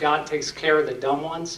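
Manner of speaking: plain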